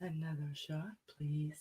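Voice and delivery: sexy, sultry, seductive delivery. Prompted to do a sound effect, the speaker says it in their sexiest voice. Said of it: "I just want you in your sexiest voice say".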